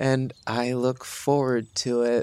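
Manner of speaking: forced out through clenched, gritted teeth. A player's character answers another character's remark, through gritted teeth. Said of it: "And through gritted teeth".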